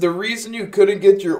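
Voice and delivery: very high speech warped and drawn out by a yawn. Host answering a viewer's question, yawning while talking. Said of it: "excuse me, I'm yawning".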